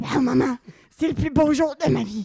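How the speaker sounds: put-on loud old heavy-smoker voice, half choking. Re-performing a character's line for friends, in an old heavy smoker voice. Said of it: "en mode une grande fumeuse de 70 ans".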